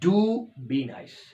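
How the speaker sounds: heavy extra stress on do. Explaining emphasis in English phrases: stress on do. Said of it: "तो थोड़ा आपने stress दे दिया".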